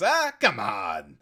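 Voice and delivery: put-on gruff voice. Explaining the silly voices used when reading games aloud, demonstrating a gruff Detective Gumshoe voice. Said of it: "without talking like this".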